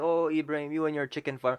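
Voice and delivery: imitated teasing laughter. Retelling how people at university react to the chicken farm: imitating people laughing at him. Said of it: "start laughing, like".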